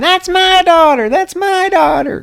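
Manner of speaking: shrill, very high-pitched screaming. Retelling a film scene where a woman grabs a photo: imitating Dahlia Gillespie screaming. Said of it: "immediately starts screaming".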